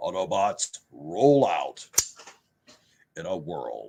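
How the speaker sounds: very deep, very slow, drawn-out character voice. Answering a chat comment by quoting Optimus Prime: Optimus Prime voice. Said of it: "something else that, um, that Optimus Prime says".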